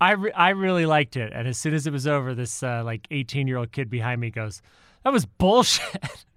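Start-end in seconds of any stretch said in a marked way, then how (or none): 5.0-6.1 mock loud outburst, much higher pitch. Recounting what a kid behind them said after a movie, imitating a loud remark. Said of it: "really loudly".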